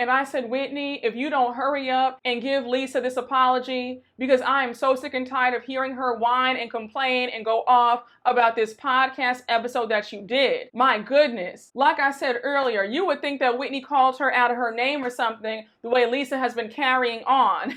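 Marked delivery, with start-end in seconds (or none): none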